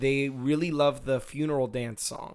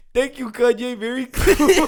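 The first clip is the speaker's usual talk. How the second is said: put-on shrill, very high, loud little-kid voice; 11 semitones higher, 11 dB louder than usual. Retelling what a young camp kid said: imitating a kid voice. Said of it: "and his kid voice".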